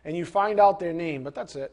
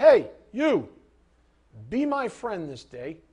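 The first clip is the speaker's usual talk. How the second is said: bossy, commanding, demanding, insistent tone. Asking listeners to imagine someone approaching Jesus, demanding voice. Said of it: "with a demanding voice and says".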